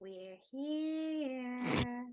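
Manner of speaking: discomforting, stretched speech. Turning back to the group at a temple entrance: discomforting delivery. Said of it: "Did you have to say it like that? That was really discomforting".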